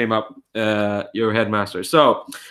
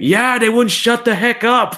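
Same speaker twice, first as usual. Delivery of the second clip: very high-pitched yell; 13 semitones higher, 5 dB louder than usual. Narrating a newspaper club scene, voicing an unknown student at the back: student shouting. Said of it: "a student you don't know shouting like".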